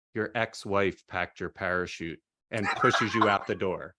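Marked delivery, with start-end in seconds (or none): 0.2-2.2 put-on whisper, lower pitch. A skydiving instructor whispering to a jumper before pushing him out, imitating a whisper. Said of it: "the instructor whispers in your ear and says".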